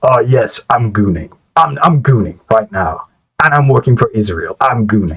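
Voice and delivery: put-on unhinged voice. Imitating Janus from his other videos: imitating Janus being unhinged. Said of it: "unhinged as his other ones where he's just talking mad shit and he's like".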